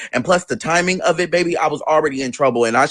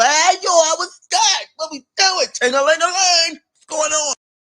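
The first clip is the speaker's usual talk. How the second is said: mock very high, loud, high-pitched voice; 13 semitones higher than usual. Acting out coming in the door at home: imitating own loud greeting. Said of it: "I'm loud".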